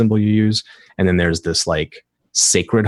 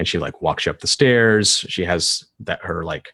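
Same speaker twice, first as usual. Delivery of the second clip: usual speaking voice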